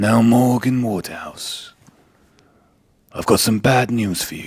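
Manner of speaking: slow, unhurried documentary-style narrator voice. Imagining a doctor giving bad news to a patient, in a David Attenborough impression. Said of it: "That does not sound like David Attenborough".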